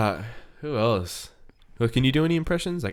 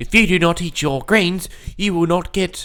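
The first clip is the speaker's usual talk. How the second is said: put-on Australian accent, female voice; 6 semitones higher, 4 dB louder than usual. Imitating a scolding mother from a comedy show: Super Wog Aussie mum voice. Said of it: "The Aussie mum".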